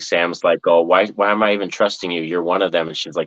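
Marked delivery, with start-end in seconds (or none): none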